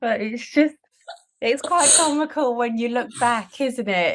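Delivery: laugh held back. Responding to a story about throwing sandwiches at a toddler, holding back a laugh. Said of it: "I'm trying not to laugh".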